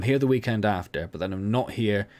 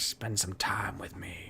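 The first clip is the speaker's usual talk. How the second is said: put-on hushed creepy wizard voice; 9 dB quieter than usual. Speaker imitating their wife's reply about the upcoming trip, in a creepy wizard voice. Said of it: "She doesn't speak like a creepy wizard".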